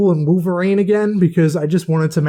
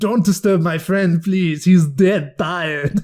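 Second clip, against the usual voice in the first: bad put-on Austrian accent. Quoting lines from a favorite movie, doing a terrible Arnold Schwarzenegger accent. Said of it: "Sorry for my terrible accent".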